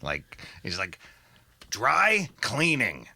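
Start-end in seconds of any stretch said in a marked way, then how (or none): 1.7-2.9 deep gravelly voice. Retelling a film scene, doing a bad Jon Polito impression. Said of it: "that wasn't a really good Polito".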